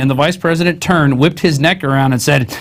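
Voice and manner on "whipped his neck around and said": normal talking voice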